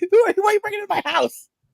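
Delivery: high, fast, panicked voice. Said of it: "She's like".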